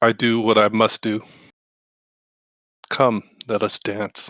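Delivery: amused, laughing-edged, speaking through a chuckle. A player answers an enemy's threat in a tabletop game, chuckling while talking. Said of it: "I kind of chuckle".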